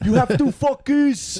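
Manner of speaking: put-on French-speaking Belgian accent. Retelling what a Belgian boss always said: French-speaking Belgian accent. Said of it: "That was a good accent".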